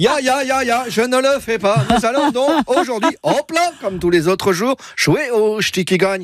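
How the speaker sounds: high, ridiculous fake Alsatian accent.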